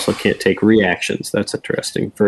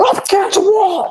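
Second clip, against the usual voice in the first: shrill, very high scream. Player voicing their character screaming at it during a game: screaming. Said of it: "And I'm just like screaming at it".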